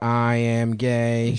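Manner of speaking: put-on robotic computer voice. Show the others how to do the impression, in a Stephen Hawking computer voice. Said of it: "If you just go".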